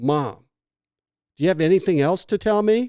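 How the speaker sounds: mock annoyed, pointed tone. Retelling asking his mom for any other secrets: retelling an annoyed question. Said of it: "I'm a little pissed off".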